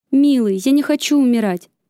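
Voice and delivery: put-on scared, frightened cry, feigned cowardice. Narrator reads Thea, playing the coward in front of a pirate: frightened exclamation. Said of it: "испуганно воскликнула Тея".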